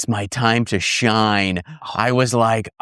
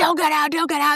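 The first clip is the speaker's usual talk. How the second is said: play-acted shrill, very high, repeated screaming. Telling a story, quoting the wife in the car, imitating wife screaming. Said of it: "my wife's now screaming. She's like".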